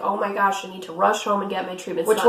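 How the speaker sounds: ordinary talk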